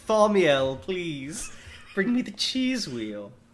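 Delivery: fancy, upper-class posh British accent. Joking about a name a wealthy british family would give a child: wealthy british parent voice. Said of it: "a really wealthy British family would name their child".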